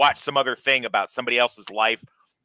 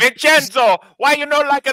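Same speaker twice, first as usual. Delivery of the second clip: mock Italian woman accent, much higher, louder; 8 dB louder than usual. Acting out a woman who draws clown pictures: imitating an italian woman. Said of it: "She's like".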